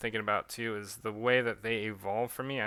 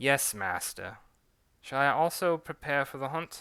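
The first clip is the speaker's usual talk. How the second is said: put-on character British accent; 3 semitones higher than usual. Voicing a character answering his master in a role-play, british accent. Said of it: "switching back between a British and French accent".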